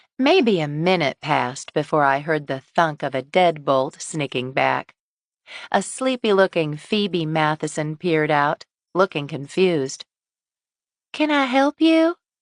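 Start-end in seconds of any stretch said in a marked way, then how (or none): 11.1-12.2 tiny, thin, very high small voice. Narrator reads a sleepy, confused woman at her door asking a visitor: small, thin voice. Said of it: "she asked in a small, thin voice".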